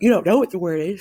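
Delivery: talking through a yawn. Explaining a class project's word-finding job to students, yawning while talking. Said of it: "Sorry, I'm yawning".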